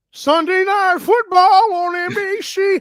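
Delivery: high, very slow announcer call, every word drawn out. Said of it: "It's my [name] impression".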